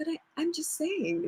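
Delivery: put-on tiny, shrunken baby voice, very high and very soft. Retelling what he said in a tense conversation: imitating Sean's very baby voice. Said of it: "he used a very baby voice".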